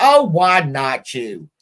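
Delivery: very slow, drawn-out grandmotherly voice. Retelling what a grandmother answered to a complaint: imitating grandma's retort. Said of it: "Like that".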